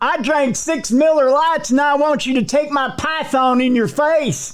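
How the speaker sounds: put-on southern Georgia accent, very high pitch. Voicing the arrested man from a news story, in a put-on Georgia accent. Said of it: "I like the Georgia accent".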